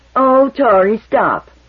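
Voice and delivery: high, loud, exasperated, impatient tone. Tori throws Bay's words back at her, impatiently mimicking Bay. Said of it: "he mimicked impatiently".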